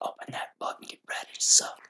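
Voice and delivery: hushed, breathy, close-to-the-ear whisper. Joking back and forth with another speaker, whispering. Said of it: "We'll just do the whole podcast whispering".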